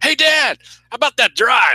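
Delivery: put-on very high, shouted-out kid voice. Retelling how the speaker's kids tease out of nowhere: imitating kids hollering. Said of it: "they'll just holler".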